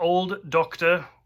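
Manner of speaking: put-on British accent. Describing a TV episode's CGI old Doctor: British accent. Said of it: "I'm stuck in the British accent now".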